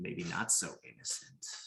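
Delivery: menacing, sinister hushed whisper. Narrator voices a blade that speaks, whispering. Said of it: "the blade whispers".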